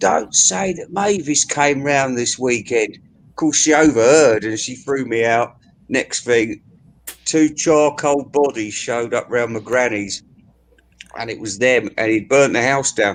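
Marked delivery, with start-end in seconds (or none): 0.0-3.0 loud, projected stage whisper. Retelling what pa said within earshot: imitating a stage whisper. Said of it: "he said in a stage whisper".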